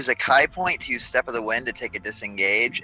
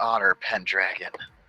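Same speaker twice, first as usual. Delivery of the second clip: muttered under breath, quiet; 2 semitones lower, 3 dB quieter than usual. In a tabletop game, a character reacts to a newcomer's introduction, under his breath. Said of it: "Beltic says under his breath".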